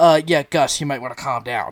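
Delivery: hesitant, placating, starting with a hesitant uh. Retelling a commentator telling his partner to calm down: imitating Joel Klatt. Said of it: "even Joel was like".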